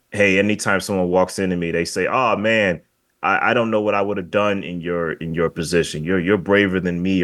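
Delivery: ordinary talk, nothing marked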